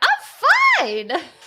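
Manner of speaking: mock very high, loud, squeaky voice cracking and breaking. Speaker discussing a scene and imitating Ross, Ross's loud cracking voice. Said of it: "That was probably really loud in the microphone".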